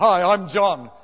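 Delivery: put-on breathlessness. Retelling a man who ran up the plane and introduced himself, imitating breathlessness.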